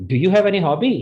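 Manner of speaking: high rising question tune. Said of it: "See the intonation".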